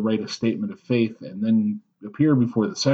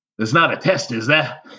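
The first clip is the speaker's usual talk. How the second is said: put-on Staten Island accent; 2 semitones higher than usual. Retelling a man's reply when asked about becoming a member, thick Staten Island accent. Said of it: "very thick Staten Island accent".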